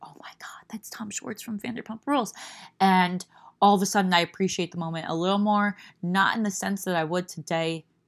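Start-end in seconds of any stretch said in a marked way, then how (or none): 0.0-2.3 soft, breathy, hushed whisper. Recounting what a friend whispered on recognizing someone, retelling a friend's whisper. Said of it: "looks over at me and whispers".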